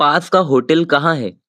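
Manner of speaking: usual speaking voice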